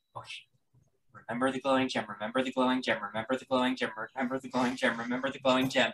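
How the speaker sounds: very quiet mutter under the breath. A player describing a spell action, saying it very quietly to themself. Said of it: "very quietly to myself".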